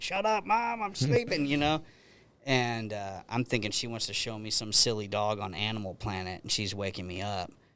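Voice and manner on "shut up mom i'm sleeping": very high, shrill yelling. Retelling being woken up by Mom in the morning: imitating own past yell. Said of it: "yelling at her".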